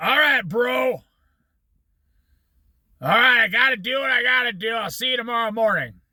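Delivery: put-on cigarette smoker's voice. Retelling a hippie's reply to a job offer: imitating a smoker's voice. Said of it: "He talked like this 'cause he smoked cigarettes".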